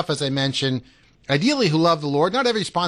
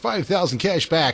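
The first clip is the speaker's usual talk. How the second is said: ordinary talk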